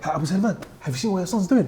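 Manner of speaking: mock shocked tone. Retelling what a man at the mosque asked the father: imitating a shocked tone. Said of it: "In that same shocked tone".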